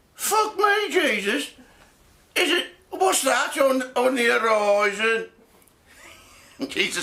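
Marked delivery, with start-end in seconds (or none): 0.2-5.3 put-on slow, unhurried, drawn-out Birmingham accent. Telling a joke about the disciples, a disciple speaks in a Brummie accent. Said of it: "if it was in Brummie".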